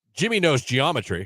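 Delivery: put-on sarcastic tone. Answering a suggestion to say something false about a baby: mock sarcastic claim. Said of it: "you should start being a little bit sarcastic".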